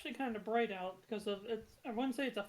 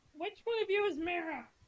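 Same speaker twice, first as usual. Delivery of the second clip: small, high female goblin voice; 8 semitones higher, 4 dB louder than usual. Voicing a female goblin who comes closer to the group, in a goblin voice. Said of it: "Please do the voice".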